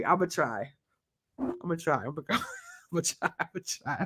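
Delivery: soft, hushed words broken by laughter. Retelling an interview, unable to say the phrase without laughing: laughing while talking. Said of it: "I cannot say that without laughing".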